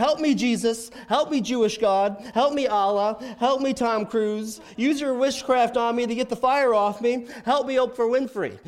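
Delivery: mock loud yelling, one burst after another. Retelling a movie scene where a driver thinks he's on fire: imitating Ricky Bobby yelling. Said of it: "Will Ferrell's character yells out".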